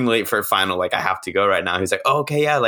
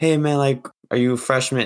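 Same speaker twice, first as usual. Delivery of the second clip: put-on strong, heavy Spanish-speaker accent; 3 semitones higher than usual.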